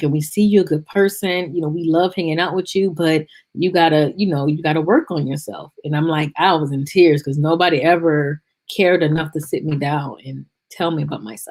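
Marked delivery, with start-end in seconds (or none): none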